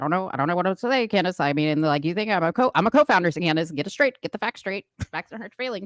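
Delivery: mock, very fast, rapid-fire talking. Acting out what a co-founder says to a woman, imitating very fast talking. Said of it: "Talking very fast like this".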